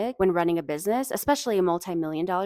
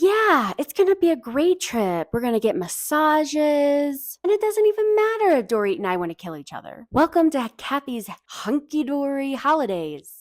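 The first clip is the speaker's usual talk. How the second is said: raised, snide, sing-song sarcasm, "massages" drawn out; 7 semitones higher, 5 dB louder than usual. Recapping a confessional, the speaker quotes Kyle, mock-sarcastic as Kyle. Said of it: "in a sarcastic tone".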